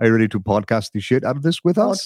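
put-on Germanic central European accent. Repeating a co-host's question to show how it sounded: imitating a central european accent. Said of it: "I can't do accents anymore, but it's a little".

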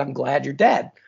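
acted, cackling laughter through the words. Retelling a movie character's line to a mob boss, imitating a cackling laugh. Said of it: "cackles his ass off with".

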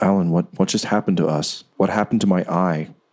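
scared, frightened voice. In a game, the voice in Alan's head speaks to him, in a scared voice. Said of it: "it sounds scared".

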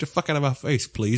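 aggressive manner kept polite on the surface. Repeating the new character's line, polite but still aggressive: Canadian Andy voice. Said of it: "So it's more polite, but he's still aggressive".

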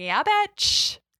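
defiant, gloating, high-pitched delivery.

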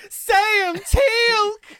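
mock upset calling out. Retelling a show scene, the speaker imitates a character getting really upset. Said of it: "he gets really upset and goes".

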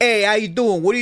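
loud, high, classic swampy backwater accent. Demonstrating the classic accent people link with swampy regions, swampy accent. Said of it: "the accent I associate with kind of hanging out in the swamp".

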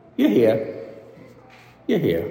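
lovingly tender, gentle voice. Quoting a writer who imagines the words spoken in the wilderness; tenderly. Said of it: "God saying tenderly".

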